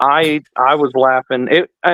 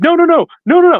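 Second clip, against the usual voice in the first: very high, frantic, flustered, put-on voice; 4 dB louder than usual. Retelling a woman's reaction after being asked what she said, imitating her flipping out. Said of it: "she flipped out and she's like".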